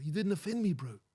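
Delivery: put-on Kiwi accent, pitched way up high. Retelling what a Kiwi guy said to him, quoting a Kiwi guy. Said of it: "I had a Kiwi guy come on and say".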